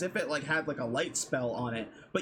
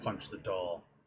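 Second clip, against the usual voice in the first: very low, deep, gruff voice; 9 semitones lower, 6 dB quieter than usual. Game master voicing a voice inside a player's head: very gruff voice. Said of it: "a very gruff voice inside your head say".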